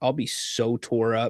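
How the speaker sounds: ordinary delivery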